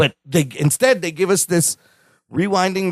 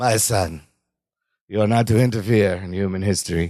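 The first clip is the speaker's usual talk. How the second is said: very low pitch, slow, unhurried delivery; 9 semitones lower than usual. Quoting a film line, answered with "is that your Brando impression": Marlon Brando impression. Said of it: "is that your Brando impression?".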